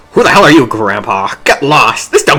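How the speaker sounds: stock bandit thug character voice. Acting a scene as the generic brigand, speaking to Samuel: generic brigand voice. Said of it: "Do you want to be generic brigand?".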